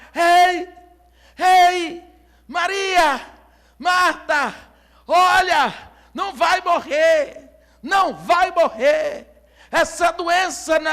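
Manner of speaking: calling out loudly, drawn-out shout as if from far off. Retelling how a young man began shouting when he saw the house: retelling a shout. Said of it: "Ele começou a gritar".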